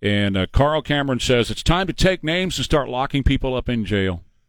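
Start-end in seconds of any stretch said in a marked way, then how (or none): none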